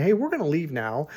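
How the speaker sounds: ordinary talk, nothing marked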